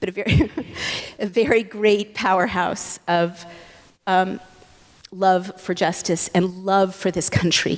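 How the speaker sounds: voice welling with tears, teary and emotional. A speaker telling about her grandmother who recently passed away, getting teary. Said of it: "And now I'm getting teary".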